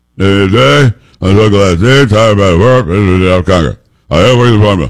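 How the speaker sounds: mumbled politician impression. Speaker announces he is doing Mitch McConnell, then talks as him: mumbling Mitch McConnell impression. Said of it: "I'm doing an impersonation".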